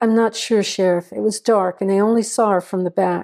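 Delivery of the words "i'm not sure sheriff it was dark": usual speaking voice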